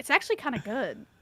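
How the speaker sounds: secretive, knowing, conspiratorial aside tone. Retelling what people said about a game: imitating a hushed tone. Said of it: "In a hushed tone".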